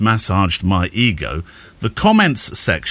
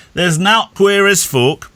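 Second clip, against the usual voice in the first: put-on very high-pitched Yorkshire old man voice; 10 semitones higher than usual. Repeating what your late grandfather used to say, do a Yorkshire grandfather impression. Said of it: "That was my best impression of a late Yorkshire grandfather".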